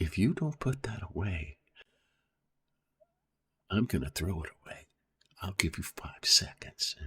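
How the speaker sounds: close, hushed whisper. Explaining how to make them listen, demonstrating getting real close: whispering. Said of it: "you get real close and you whisper".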